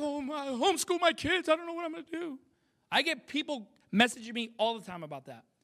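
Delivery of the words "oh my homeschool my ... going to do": mock, high, fretting worried-parent voice. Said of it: "if you're like".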